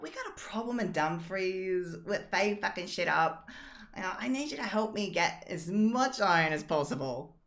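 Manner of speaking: bright, rather cheerful voice. A storyteller voices a woman asking a player for help, cheery voice. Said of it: "she says in a rather cheery voice".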